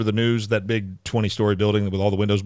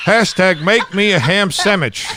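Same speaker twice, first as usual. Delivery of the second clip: very high-pitched, loud grandfather voice; 10 semitones higher, 5 dB louder than usual. Imitating a grandfather who uses hashtags: imitating a grandfather. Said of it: "you sound like my grandfather".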